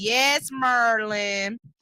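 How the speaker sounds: put-on Washington DC accent. Retelling a teacher's reply: dc accent. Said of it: "in my D C accent".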